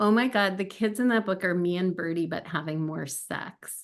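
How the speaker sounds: usual speaking voice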